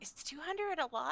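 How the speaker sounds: soft, high, hushed half-whisper. A game narrator voices a character asking a question, half-whispering. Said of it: "she kind of whispers".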